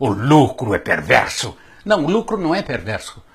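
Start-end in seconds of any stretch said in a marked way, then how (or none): 0.0-1.6 very low-pitched, grumpy grumbling voice. Voicing an imagined radical's objection to profit: imitating a grumpy radical. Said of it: "Dirá um mal-humorado radical".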